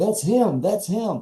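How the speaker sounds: play-acted, high, thrilled, cheerleader-style excited exclaiming. Retelling what the wife said while jumping up and down: imitating an excited wife. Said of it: "she's all excited".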